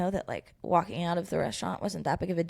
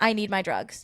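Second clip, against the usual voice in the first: plain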